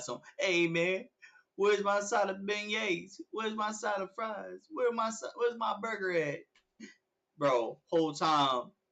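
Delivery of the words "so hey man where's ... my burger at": irritated, annoyed, pitched-up voice. Imagining a customer asking about a missing order: imitating a customer. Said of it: "Bob or Jeffrey be like".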